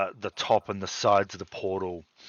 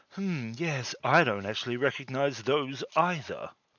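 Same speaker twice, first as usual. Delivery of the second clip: soft-spoken, gentle voice; 4 semitones higher, 3 dB quieter than usual. Narrating the scene, the speaker voices a voice from the treetop in a soft voice. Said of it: "you actually hear a soft voice from the tree".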